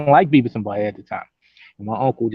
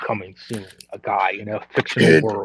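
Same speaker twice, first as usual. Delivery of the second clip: nineties coming-attractions movie trailer narrator voice; 3 semitones lower, 4 dB quieter than usual. Imitating the trailer guy from nineties movie trailers: imitating the movie trailer guy. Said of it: "We used to watch the trailers, and he'd be like".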